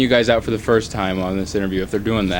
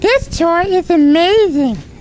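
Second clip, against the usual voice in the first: very high, squeaky puppet voice, slow; 6 dB louder than usual. Trying a line about a toy in the Elmo voice: Elmo voice. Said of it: "I'll try it in the Elmo voice".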